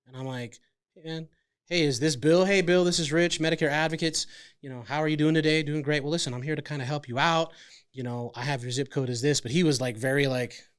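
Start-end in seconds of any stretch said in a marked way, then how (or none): 0.9-9.4 mock robotic, flat machine-like put-on voice. Mimicking his agent's scripted call, imitating the agent sounding robotic. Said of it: "He sounds like a robot".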